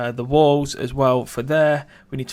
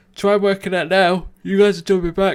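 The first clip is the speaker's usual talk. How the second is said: speaking through a yawn, higher and louder; 6 semitones higher, 4 dB louder than usual. Speaking to a group early in the morning: yawning while talking. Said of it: "Sorry, I'm yawning".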